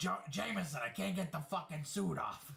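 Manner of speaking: put-on Brooklyn gangster accent, pitched high. Picturing the villain as a gangster, voicing Scorpion in a Brooklyn accent. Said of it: "I just picture a Brooklyn accent".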